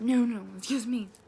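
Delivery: mock angry, insistent, loud retort. Retelling a restaurant incident, voicing a man's reply to another diner, imitating an angry man. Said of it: "He was like still pissed".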